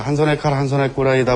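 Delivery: normal talking voice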